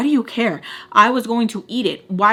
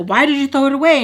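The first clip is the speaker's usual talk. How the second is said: acted, loud, high-pitched, demanding yell; 5 semitones higher, 5 dB louder than usual. Retelling an argument about thrown-away food, retelling own yell. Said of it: "So I start yelling at her".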